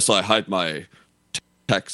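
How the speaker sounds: put-on posh banker accent. Retelling a film of a man dressed like a banker, in a posh banker accent. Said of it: "Don't do the accent".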